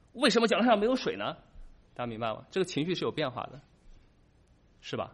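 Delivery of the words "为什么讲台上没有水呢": alarmed, accusing, loud, high, panicked voice. Retelling panic when the stage had no water: acting panicked, demanding question. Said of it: "我产生了恐慌，我就开始说 / 这是一种质问".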